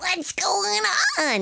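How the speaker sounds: very high, creaky, silly duck voice. Recalling playing a stupid duck in the show Story Theater, talking like a duck. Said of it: "talk like a duck".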